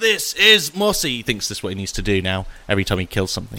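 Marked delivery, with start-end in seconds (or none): 0.0-1.2 very high, booming battle-cry shout. Game narrator voicing a character's cry after he stabs a scorpion: shouting. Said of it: "and he shouts".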